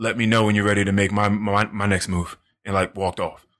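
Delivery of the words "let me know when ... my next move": put-on whisper, lower pitch. Retelling how a man whispered a line in the ear: imitating a whisper. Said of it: "whispered in my ear one time".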